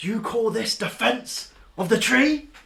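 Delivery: booming, very high, loud, amplified-sounding voice. Speaking as a character who magically makes their voice boom: booming voice. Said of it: "to make my voice boom".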